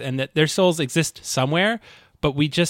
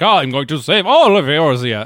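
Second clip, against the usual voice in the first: loud, self-important, grandiose voice; 7 dB louder than usual. Retelling how one character mocks another's savior complex: mocking Alphinaud impression. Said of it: "she does a great Alphinaud impression".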